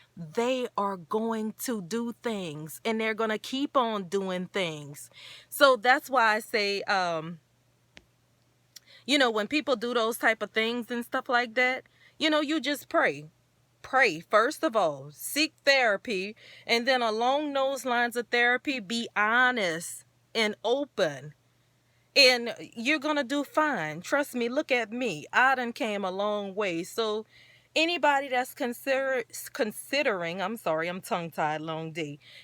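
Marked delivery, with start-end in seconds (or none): 0.2-5.1 deliberate emphasis, slowed down and spelled out. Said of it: "'Cause read my lips".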